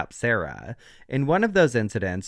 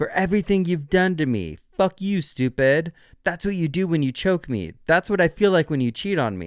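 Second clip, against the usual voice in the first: put-on slurred, laughing, mocking voice, much higher; 4 semitones higher than usual. Retelling videos where Sarah taunts George in a suitcase, imitating Sarah laughing and slurring. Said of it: "laughing and slurring her words".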